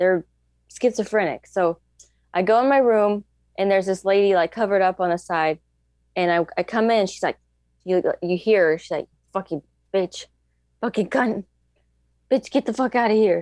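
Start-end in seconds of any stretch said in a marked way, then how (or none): 9.3-13.4 put-on muttering under the breath. Retelling a roommate cursing at them: imitating muttering under breath. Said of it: "just under her breath".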